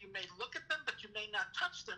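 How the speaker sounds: plain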